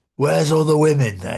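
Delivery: put-on creepy, leering, lecherous old-man voice. Retelling what an old customer said at work: imitating a creepy old man. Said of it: "It's the way he said it".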